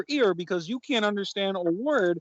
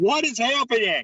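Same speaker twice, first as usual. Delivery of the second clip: shouting; 3 semitones higher, 3 dB louder than usual. Joining the others over the phone, asking what is happening: shouting. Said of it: "Why are you shouting?".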